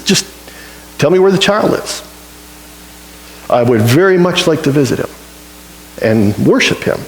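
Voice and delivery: ordinary talk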